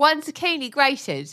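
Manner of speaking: slow, high British celebrity-chef voice.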